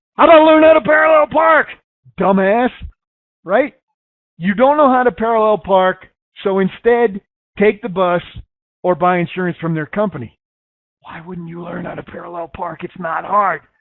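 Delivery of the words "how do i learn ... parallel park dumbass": very high-pitched, loud screaming. Retelling a reaction to a TV commercial: imitating screaming at a screen. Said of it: "I started screaming at the screen saying".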